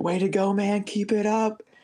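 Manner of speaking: put-on high, drawn-out, stretched-long yelled cheer. Runner retelling a motorcyclist shouting at him mid-run, retelling a yelled cheer. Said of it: "he's like yelling at me like".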